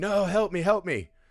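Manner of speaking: mock full scream, high and drawn-out. Retelling how a man screamed when city workers came: imitating someone screaming. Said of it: "He's screaming".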